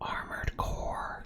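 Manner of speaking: whispering close into the microphone. Trying to summon Philip by saying a game title: whispering into the microphone. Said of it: "Just to whisper it into the microphone".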